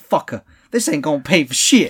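loud, high-pitched belted delivery.

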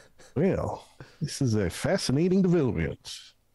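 put-on genteel American Southern gentleman accent. Player as a bugbear after peering into an armored companion's visor, Southern-gentleman accent. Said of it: "he's a southern gentleman. / he's a southern gentleman. Southern of one of these continents where this accent totally happens, I assume. Absolutely. Yeah, I can't wait to hear yours. he's very being a".

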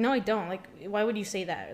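acted-out, super defensive tone. Speaker retells their past answer to someone's question, acting out being super defensive. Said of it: "just being super defensive".

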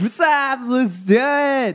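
very high, slow, drawn-out, spaced-out sounding voice. Imitating Jesse Camp hosting, sounding high with a lisp: imitating Jesse Camp, sounding high. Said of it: "really high on something".

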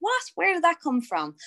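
high, wide-ranging baffled surprise.

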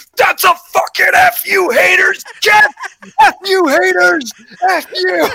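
shrill, very high, drawn-out hyped yell. Retelling standing up after a catch, imitating own hyped yelling. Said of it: "I stood up and I was like".

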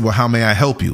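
mock heavy sarcasm in an overly polite, customer-service tone. Retelling a greeting during a tense stare-down: imitating a sarcastic tone. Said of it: "But he said it so sarcastically".

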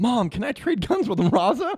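put-on very high, bouncy, eager, excited child voice. Retelling an X-Men scene, young Cable talking to Jean; excited young Cable voice. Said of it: "young little Cable's all excited".

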